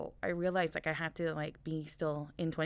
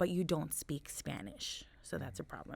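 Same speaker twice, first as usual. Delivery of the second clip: plain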